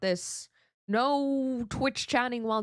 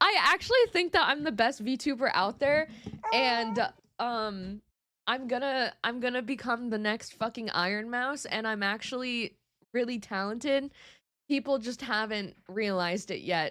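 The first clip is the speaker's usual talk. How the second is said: plain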